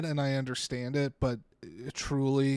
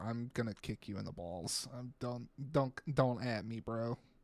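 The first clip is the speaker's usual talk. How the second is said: soft, beaten-down, sorrowful and defeated tone; 3 semitones lower, 8 dB quieter than usual. Imagining a reply to the HOA about the flower bed, mock-defeated and sad. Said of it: "it came out of my mouth with such defeat and sadness".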